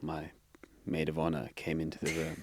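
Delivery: low, quiet storyteller voice. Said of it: "You've got a good storytelling voice".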